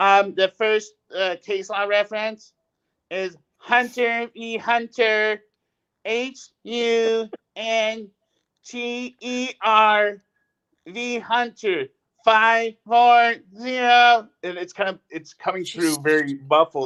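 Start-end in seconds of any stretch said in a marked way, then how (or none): 0.3-14.3 very slow, halting, high-pitched reading aloud. Retelling how a woman read out a case citation, imitating her voice. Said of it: "I'm gonna kinda imitate her voice".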